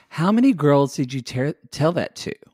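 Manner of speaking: ordinary delivery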